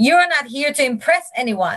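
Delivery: shouting, pitched high. Recounting a training session, quoting the master trainer's opening words, retelling a shout. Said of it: "she just shouted like".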